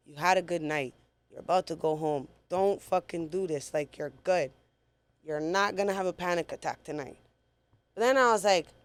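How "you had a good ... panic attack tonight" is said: usual speaking voice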